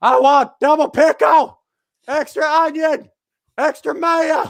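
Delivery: mock very high, slow, drawn-out yell. Retelling how a lady in the front row yelled her order: imitating someone yelling a food order. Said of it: "So she's yelling".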